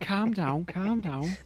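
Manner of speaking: put-on Scouse accent, pitched way up. Joking about British regional stereotypes, in a mock Scouse accent. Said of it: "that's Scouse, isn't it?".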